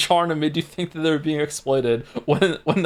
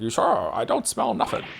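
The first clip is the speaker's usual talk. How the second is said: strange, rough, creaky put-on voice; 3 semitones higher, 4 dB quieter than usual. Recalling the weird voice he started doing for Tangrowth, Tangrowth voice. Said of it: "this weird voice I started doing for Tangrowth".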